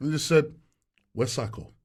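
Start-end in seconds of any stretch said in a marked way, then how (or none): 1.1-1.7 play-acted, dead flat, very low deadpan. Retelling a stranger's question at the door: imitating a deadpan question. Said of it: "deadpan in my face".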